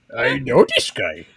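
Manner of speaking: loud voice of a big furry puppet monster. Repeating another speaker's line, in a Cookie Monster voice. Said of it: "I can do Cookie Monster".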